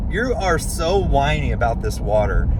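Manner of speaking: plain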